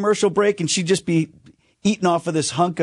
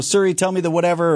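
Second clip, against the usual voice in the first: normal talking voice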